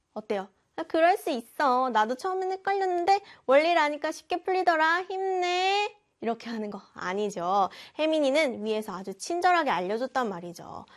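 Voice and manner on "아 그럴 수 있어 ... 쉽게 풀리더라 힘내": playful, needling, teasing tone, pitched up. Speaker showing how the encouraging sentence sounds when said teasingly, teasing tone. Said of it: "놀리면서 말하는 거?".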